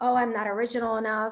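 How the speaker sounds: ordinary delivery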